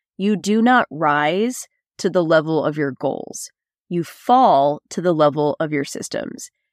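ordinary talk, nothing marked

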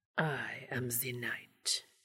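terrible put-on Transylvanian accent in a low whisper. Dean whispers into Castiel's ear in a terrible faux Transylvanian accent. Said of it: "affected a terrible faux Transylvanian accent and whispered".

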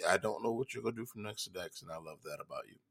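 soft, tender, heartfelt.

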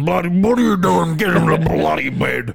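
very loud, rough, stern dad voice. Joking about how dads talk to kids at bedtime, the speaker does a put-on dad voice. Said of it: "get the Dad voice".

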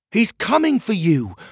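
very high, loud shout. Narrator reads Pockets shouting back as guards carry him away: shouted. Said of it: "Pockets shouted back".

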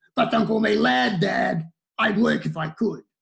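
put-on hostile, combative, antagonistic teenage young man voice. Voicing a young man talking back to his dad: aggressive, antagonistic 18-year-old male. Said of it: "this is a voice of an aggressive, antagonistic 18-year-old male".

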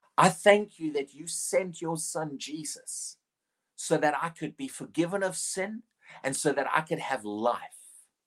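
slow, each line separated by long pauses. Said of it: "I'll say them slowly".

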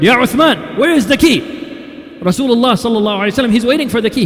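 put-on, loud, stern, rapid shout. Retelling Umar ibn Khattab knocking at Uthman's door for the key: retelling Umar's loud, stern call. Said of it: "in a very loud, stern voice".

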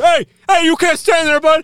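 shrill, very loud, bossy, high-pitched scream. Speaker describes playing safety boys in a gallery; imitating screaming at people. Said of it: "just screaming at people".

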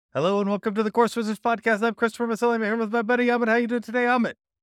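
speeding through words, very fast. Podcast host welcoming listeners and co-host amit, talking very fast. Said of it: "you're going so fast".

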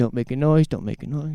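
nervous, fading voice. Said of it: "he would have been so nervous".

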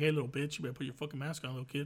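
mock tough, threatening voice. Acting out scolding a kid to wear a mask: mock tough scolding. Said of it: "I'm gonna have to use words now".

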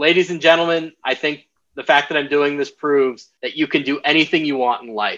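usual speaking voice

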